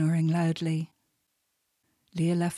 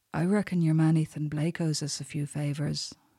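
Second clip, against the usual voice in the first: plain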